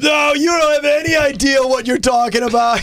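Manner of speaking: mock radio-host rant, shouted as if on air.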